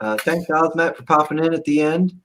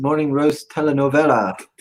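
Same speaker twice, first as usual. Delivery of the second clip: ordinary delivery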